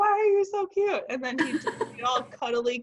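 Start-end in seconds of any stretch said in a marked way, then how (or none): 0.0-1.0 very high, loud, doting, affectionate yelling. Showing how she talks to Finley, acting out yelling at him: mock-yelling affectionately. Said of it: "I'm just yelling at him because he's so cute".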